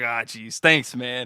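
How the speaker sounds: put-on grumbling voice. Retelling thanking a store clerk: imitating his own put-on grumbling. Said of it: "You're grumbling and shit".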